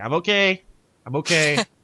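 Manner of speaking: loud, very slow calling voice. Calling through a door in character to people outside: calling out loud enough to be heard outside. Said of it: "I say it loud enough that people outside the door will be able to hear it".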